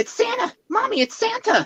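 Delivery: put-on tiny child's voice, very high. Speaker stocking shelves retelling a little boy calling out to his mother, imitating a little child's voice. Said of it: "I suddenly heard this little voice say".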